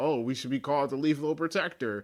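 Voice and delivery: ordinary talk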